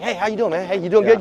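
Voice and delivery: put-on excited voice. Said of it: "He's always excited".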